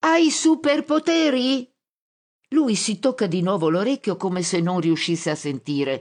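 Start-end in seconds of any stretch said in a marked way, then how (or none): 0.0-1.7 high-pitched shouting. Hugging the narrator's hips, someone shouts to a man who hears poorly. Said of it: "grida all'uomo".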